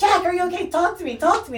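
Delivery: very high-pitched, loud scream. Retelling a scene where a woman on top of jack screams at him, imitating her screaming. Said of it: "She's screaming".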